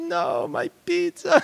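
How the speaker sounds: very high, tearful sobbing. Recalling being handed a mangled pizza box, the speaker retells sobbing. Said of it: "I'm just sobbing".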